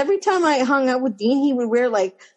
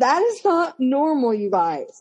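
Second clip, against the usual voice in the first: ordinary talk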